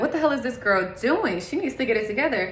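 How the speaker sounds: normal talking voice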